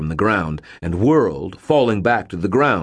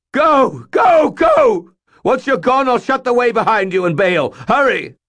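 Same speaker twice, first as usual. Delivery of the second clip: shrill, very high, loud terrified shriek; 6 dB louder than usual. Reading Bob's line as he urges the narrator to go: shrieking in bone-deep terror. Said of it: "bone-deep terror in his voice".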